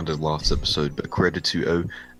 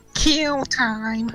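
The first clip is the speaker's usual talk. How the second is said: eerie, very high-pitched, scary spooky voice. Telling a story where Tails Doll answers Sonic.exe, in a scary Tails Doll voice. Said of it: "Tails doll said in a scary voice".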